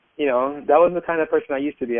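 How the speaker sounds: ordinary talk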